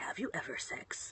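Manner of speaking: eager, excited, really loud stage whisper. Retelling a sleepy kid's question before his turn: imitating a loud whisper. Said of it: "whispering it really loudly before it's his turn".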